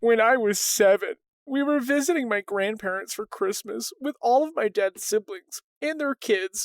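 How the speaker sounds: mournful, sad, sorrowful storytelling voice. The speaker reads a written story aloud to the other host, in a sad voice. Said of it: "I'm gonna read this in a in a sad voice".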